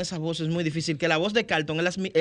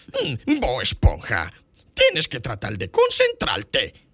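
cartoon crab voice, pitched low, tune swinging widely; 5 semitones lower, 4 dB louder than usual. Showing how the character's tone should sound, demonstrating the Don Cangrejo voice. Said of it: "como que va por ahí el tono".

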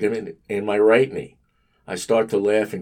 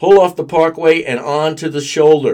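very loud, high bellow, as over a loudspeaker; 7 semitones higher, 9 dB louder than usual. Narrator reading a cop ordering a driver onto the shoulder, bellowing through a loudspeaker. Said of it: "he bellows through the loudspeaker".

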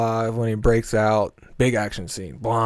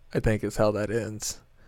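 normal talking voice

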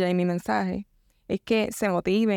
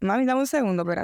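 usual speaking voice

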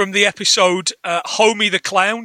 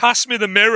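ordinary talk

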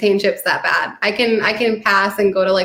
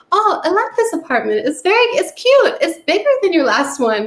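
bad Swedish accent, swooping sing-song tune; 9 semitones higher than usual. Retelling what a Swedish mover said, imitating [name]'s bad Swedish accent. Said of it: "this is going to be such an offensive accent".

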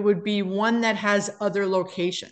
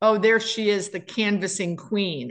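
plain

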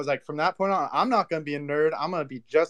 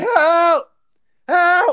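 shrill, piercing, very high, very loud cry; 11 dB louder than usual. Telling a story of legs shaking and no one coming, retelling a yell for help. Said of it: "I'm yelling".

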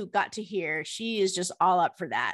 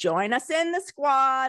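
put-on New Jersey accent, pitched up; 5 semitones higher, 3 dB louder than usual. Host closing a podcast ad for listeners, in a put-on New Jersey accent. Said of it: "I'm giving you my like New Jersey accent".

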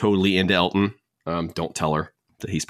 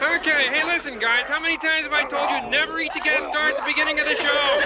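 yelling in a put-on puppet frog voice. Retelling how Kermit the Frog yells at the crocodiles: imitating Kermit the Frog yelling. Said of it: "Kermit yells at the crocodiles".

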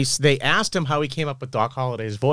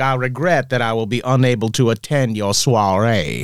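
put-on Southern gentleman accent, Georgia. Retelling a friend's answering machine message, imitating a southern gentleman. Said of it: "who was from Georgia".

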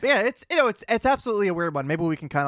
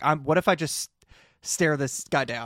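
ordinary talk, nothing marked

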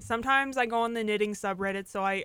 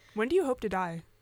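robotic voice. Asking a joke question to another speaker: robot voice. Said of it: "You literally sounded like a robot".

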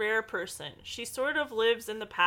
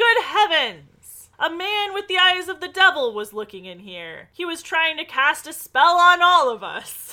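very loud, high, shrieking screaming cry; 7 semitones higher, 12 dB louder than usual. Retelling a woman dropping the shortcake she was serving: acting out a scream. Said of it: "She screams".

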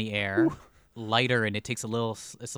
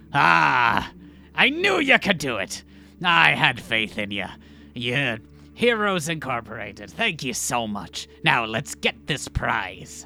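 loud, slow swashbuckler captain voice, long drawn-out ah; 3 semitones higher, 6 dB louder than usual. Game master voicing the captain who teleports in to greet the heroes, swashbuckling captain voice. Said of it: "He is a swashbuckle. Captain. / you see the captain as he teleports in and looks at all of you and says, / you see the captain as he teleports in and looks at all of you and says".

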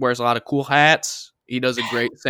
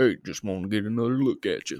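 low, soft film-star voice kept quiet; 4 semitones lower, 6 dB quieter than usual. Quoting Bradley Cooper's line from a movie you love, as a Sam Elliott impression. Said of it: "that's where he got the voice from".

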